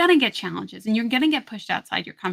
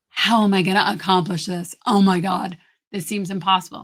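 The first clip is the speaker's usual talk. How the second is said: weighed-down, stressed, overwhelmed heavy tone; 2 semitones lower, 4 dB louder than usual. Demonstrating an unhelpful way of questioning yourself, heavy, overwhelmed tone. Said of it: "Really heavy, really stressful. Oh my God, really overwhelming".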